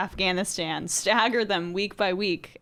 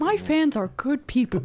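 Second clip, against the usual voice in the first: breathy, soft voice with Oklahoma tinge, higher pitch; 6 semitones higher than usual. Trying the fed line as Elizabeth Warren: imitating Elizabeth Warren. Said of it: "Can we do Elizabeth Warren doing the same thing".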